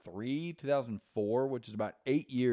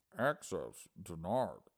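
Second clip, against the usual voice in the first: bad put-on announcer voice, lower pitch; 5 semitones lower than usual. Quoting lines from the game Half-Life: bad Half-Life computer voice. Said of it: "I can't do the voice correctly".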